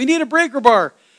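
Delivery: loud, high-pitched, far-carrying yell. Retelling how a guy across the field called for a breaker bar, retelling a yell. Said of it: "and the guy over here yells".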